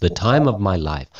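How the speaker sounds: ordinary talk, nothing marked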